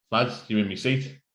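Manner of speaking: ordinary talk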